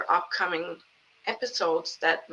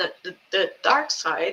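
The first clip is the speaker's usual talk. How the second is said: excited, swooping stutter on "the". Turning to the dark side of spirituality and apologizing for the stumble, stuttering, excited. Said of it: "sorry about stuttering, I'm still pretty excited".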